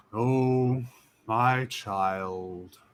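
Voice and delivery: huge, far too deep, resonant voice. Narrating a tiny creature looking into the hole, speaking in a far too deep, resonant voice. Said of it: "in a voice that is far too deep".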